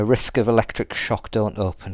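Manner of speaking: ordinary talk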